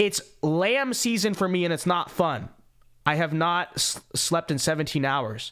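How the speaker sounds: ordinary talk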